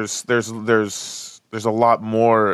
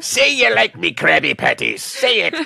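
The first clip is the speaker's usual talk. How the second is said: high, rough, swooping, sing-song cartoon crab voice; 8 semitones higher, 4 dB louder than usual. Picturing a film sailor talking about food: Mister Krabs voice. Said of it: "Mister Krabs from SpongeBob SquarePants".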